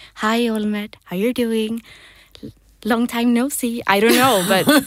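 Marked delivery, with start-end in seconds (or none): 0.2-3.9 put-on childlike little kid voice. Retelling how they greet someone they pat, in a childlike voice. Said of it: "I'm speaking to him with my child voice, like".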